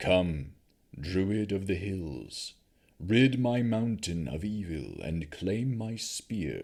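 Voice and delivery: deep, rumbling voice calling out. Narrating a story, a voice calls to the druid from the hill: rumbling voice. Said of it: "a rumbling voice called again".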